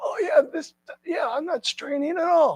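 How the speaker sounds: strained, very high-pitched voice. Guiding a stretch, showing how your voice shouldn't sound, strained voice. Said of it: "my voice isn't strained".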